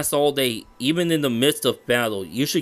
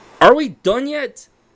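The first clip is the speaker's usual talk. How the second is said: very high, shrill, high-pitched shout; 10 semitones higher, 7 dB louder than usual. Meditating with a partner, losing patience: shouting. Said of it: "Why are you shouting?".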